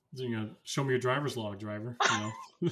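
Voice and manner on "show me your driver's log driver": usual speaking voice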